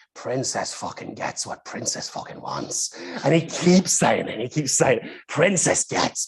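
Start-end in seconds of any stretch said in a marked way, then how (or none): 0.2-3.0 put-on Irish voice, lower, quieter, faster. Telling a fantasy in which Colin Farrell starts speaking, in Colin Farrell's Irish voice. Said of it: "in his Irish voice".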